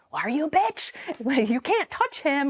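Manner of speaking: furious, high, rising angry screaming. Retelling a confrontation with a girl in a school hallway: imitating own past screaming. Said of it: "I'm screaming at this girl".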